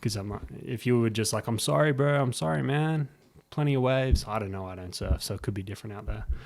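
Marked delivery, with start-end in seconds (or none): 1.5-4.2 fake, put-on, extra-nice, ultra-nice tone. Showing how to answer someone being aggressive: put-on ultra nice. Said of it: "played the ultra nice, like, card".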